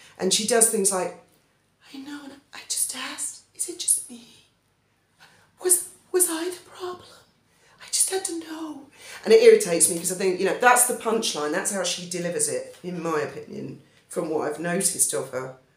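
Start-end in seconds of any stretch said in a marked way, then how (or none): 2.0-8.8 very quiet, high, hushed stage whisper. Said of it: "why is she whispering".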